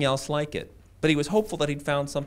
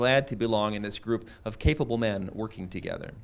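ordinary delivery

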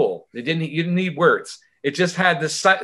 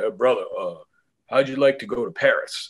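exaggerated put-on bass voice, dropped very low; 5 semitones lower than usual. Retelling a bandmate's invitation, imitating his really deep voice. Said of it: "he has a really deep voice".

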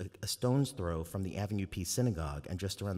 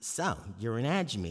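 slow, attempted put-on Brooklyn accent; 3 semitones higher than usual. Reading a scene aloud, voicing a girl at school: brooklyn accent. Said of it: "I'm gonna try to do a Brooklyn accent".

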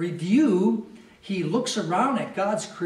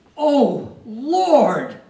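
powerful, loud, forceful jubilant cry; 4 semitones higher, 7 dB louder than usual. Reading a verse aloud, imagining how David said it: imitating David's powerful cry. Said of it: "some power in his voice".

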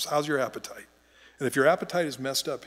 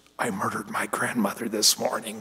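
put-on whisper, lower; 4 semitones lower than usual. Retelling how the President greets people in a line: imitating a whisper. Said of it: "and he'd whisper".

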